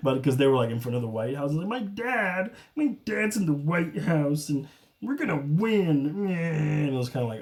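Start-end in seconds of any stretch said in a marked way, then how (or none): 1.7-6.1 high-pitched, slow, puppet-style voice. Imitating Eric Trump at a rally: Eric Trump in a Kermit the Frog voice. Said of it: "I made him sound like Kermit the Frog".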